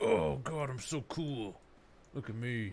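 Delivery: slow, smug, cocky show-off drawl. Imitating a hero that looks like a gym guy: imitating a show-off gym guy. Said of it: "That was a spot-on impression of that guy".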